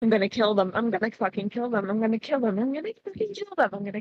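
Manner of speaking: same words repeated in a loop, directed at oneself. Acting out a woman getting out of the van, speaker is muttering to herself. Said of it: "she's like muttering that to herself over and over".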